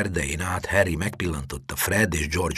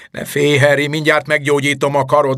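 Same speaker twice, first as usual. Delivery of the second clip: loud, booming, very high-pitched voice; 9 semitones higher, 8 dB louder than usual. Reading a man calling out to a gathering crowd of students, booming loudly. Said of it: "harsogta Lockhart".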